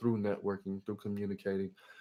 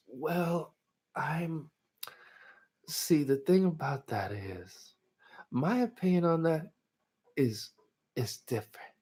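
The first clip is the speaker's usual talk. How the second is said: slow, high, drawn-out, unhurried way of talking; 7 semitones higher than usual. Speaker shows how his cousin talks, imitating cousin's slow soft voice. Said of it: "And he talks like this".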